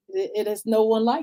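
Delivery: ordinary talk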